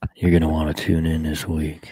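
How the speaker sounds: seductive voice. Performing a sample phone reminder message on request: flirty voice. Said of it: "All the ladies just signed up".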